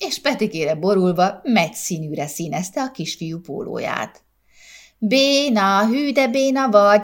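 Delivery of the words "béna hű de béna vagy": high whinnying, neighing laugh, drawn out. Narrator reads Zsófi jeering at her twin brother, whinnying laugh. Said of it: "nyerített Zsófi".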